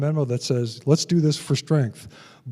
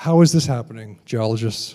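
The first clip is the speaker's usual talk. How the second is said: usual speaking voice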